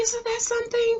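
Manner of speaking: hushed, very soft, high, ladylike feminine voice. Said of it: "she was talking real soft, very feminine".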